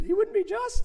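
very high, squeaky little voice. Speaker reenacts answering Sproul's question as his throat gave out: retelling a squeaky Mickey Mouse voice. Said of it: "I sounded like Mickey Mouse down in Orlando".

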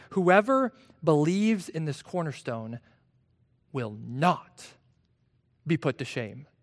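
strong emphatic stress on the word "not". Quoting a verse from Peter, stress on not. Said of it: "You probably heard me emphasize that word not".

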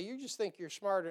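ordinary delivery

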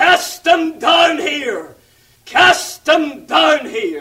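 play-acted, high-pitched, hellish crying out. Retelling a man's account of the voices he heard, the devil crying out from the pit. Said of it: "the devil was crying out from the bottomless pit".

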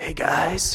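raspy, rasping stage voice. Imitating how speakers at men's conferences talk: imitating a raspy voice. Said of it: "It's really, like, raspy".

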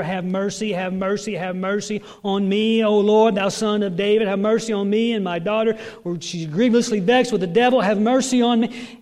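desperate, pleading crying out. Retelling a woman's repeated plea to the Lord: imitating someone crying out for mercy. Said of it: "crying out over and over".

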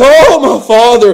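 acted-out crying out through sobs. Speaker retelling how he cries out to the father: retelling a crying-out. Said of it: "Here he cries".

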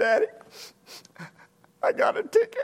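boohooing through tears, tearful crying voice. A father recalls his daughter phoning about a ticket: imitating Kathy crying. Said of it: "She was just crying".

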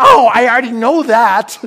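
shrill, very high, loud indignant retort. Retelling what she said when told she had a secret admirer: mock-mad reply. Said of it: "She was all mad".

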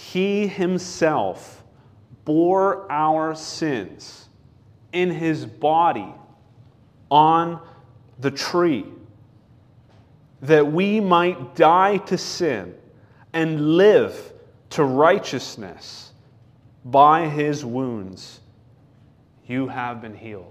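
slow, deliberate reading, letting each phrase land. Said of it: "I'll read it slowly".

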